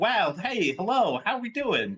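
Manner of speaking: fake-friendly, over-bright tone. Mocking how unnaturally everyone greets each other, mock unnaturally friendly greeting. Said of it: "as unnatural as like everyone being like".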